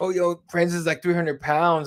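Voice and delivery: ordinary talk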